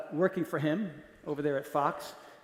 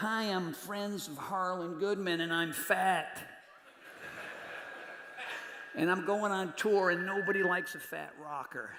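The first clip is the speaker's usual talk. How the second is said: put-on laid-back rocker voice, quieter; 5 dB quieter than usual. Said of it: "it's a really good and Petty impression".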